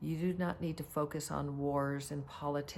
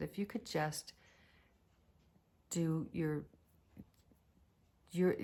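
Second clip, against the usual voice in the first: imitated, put-on whisper. Retelling what was said to a partner being flown by helicopter: retelling a whisper. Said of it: "I just kinda whispered to him".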